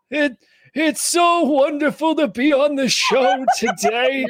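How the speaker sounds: put-on very high, slow elderly old man voice. Joking about being an old married couple, in an old man voice. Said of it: "not an old man voice".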